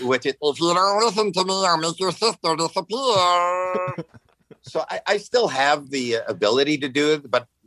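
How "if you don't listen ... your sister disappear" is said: high, pitched-up, cartoonish puppet voice. A voice actor recalls playing Bunsen Honeydew on Muppet Babies, in the Bunsen Honeydew voice. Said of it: "I was also Bunsen Honeydew".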